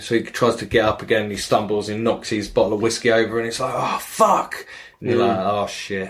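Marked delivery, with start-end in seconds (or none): 3.7-4.6 annoyed, a little angry, pitched-up curse. Retelling a man who stumbled and knocked over his whiskey, imitating him getting angry. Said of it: "he starts getting a little bit angry".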